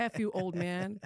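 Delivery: very slow, drawn-out, angry, furious flare-up. Retelling cursing at an old man in a store: retelling her own furious outburst. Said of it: "flipped out".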